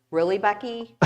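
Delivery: plain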